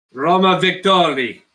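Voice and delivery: put-on Russian accent. Calling out a group roll result in a put-on russian accent. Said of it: "That was a Russian accent".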